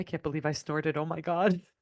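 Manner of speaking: mock muttering under the breath, quiet. Retelling what someone muttered after snorting: imitating muttering under breath. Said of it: "under his breath, he goes".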